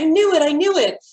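triumphant, excited tone.

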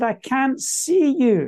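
put-on very slow, drawn-out screaming cry. Retelling a man in a hotel who screamed out: imitating a man screaming. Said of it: "this man screams out".

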